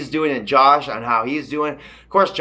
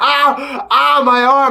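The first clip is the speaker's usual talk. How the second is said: put-on very high, very slow, drawn-out pained old lady wail; 12 semitones higher, 6 dB louder than usual. Retelling a TV scene about an old lady: imitating an old lady in pain. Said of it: "this old lady's arm, and she's like".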